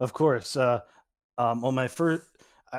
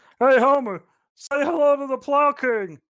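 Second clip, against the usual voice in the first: pitched way up, very high, loud cartoon voice; 13 semitones higher, 7 dB louder than usual. Recounting the Mister Plow episode to a co-host; Barney Gumble impression. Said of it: "That is a perfect impression that you do".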